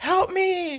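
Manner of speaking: very high, strained, pleading cry.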